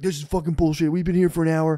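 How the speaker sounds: mock irate, heated, angry rant. Retelling people who pushed in and screamed at the man behind the counter, imitating screaming. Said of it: "start screaming at".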